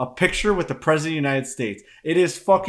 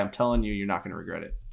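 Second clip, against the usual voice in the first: ordinary talk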